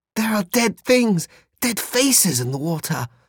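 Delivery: very high, horror-struck cry. He springs back from the water in the bog, horrified. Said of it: "he said with horror".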